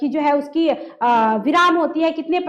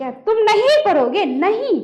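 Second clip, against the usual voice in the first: नहीं hit hard, angry stress; 5 semitones higher than usual. Teaching hindi word stress with a question about studying: strong stress on नहीं. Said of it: "नहीं शब्द पे क्या देना पड़ा? बल देना पड़ा।".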